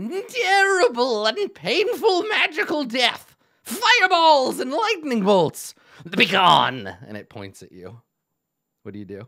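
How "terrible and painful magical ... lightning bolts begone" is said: very high, slow, drawn-out marionette puppet voice. Running a game, voicing a creature that turns to the players, Thunderbirds puppet voice. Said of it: "it it talks like this".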